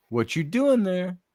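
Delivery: lilting, sing-songy voice. Retelling a woman's voice heard on an EVP recording: imitating a sing-songy lilt. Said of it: "Just kind of that sing-songy lilt".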